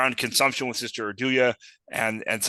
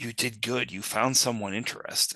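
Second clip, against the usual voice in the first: quieter whisper in a put-on character voice; 5 dB quieter than usual. Whispering in character into Cetus's ear to create intimacy: whispering in character. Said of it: "I whisper in, in Cetus's ear".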